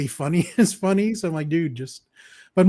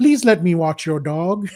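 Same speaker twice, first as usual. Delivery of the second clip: big, goofy, over-the-top comedy-sketch voice. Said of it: "Sandler as Tim Herlihy".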